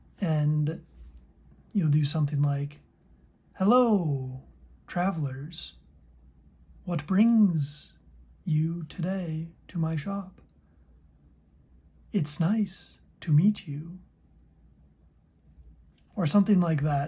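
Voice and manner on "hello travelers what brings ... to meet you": slow, oddly cadenced shopkeeper voice. Demonstrating how to voice a shopkeeper greeting the party, shopkeeper voice with unusual cadence. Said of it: "having a unique cadence to how the character speaks".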